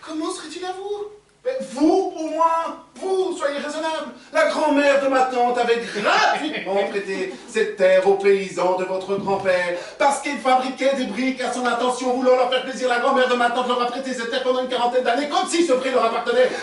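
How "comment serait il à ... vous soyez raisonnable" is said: pleading, begging tone. In a dispute over who owns the meadow, the speaker begs Stéphane Stépanovic: pleading. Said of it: "je vous en supplie".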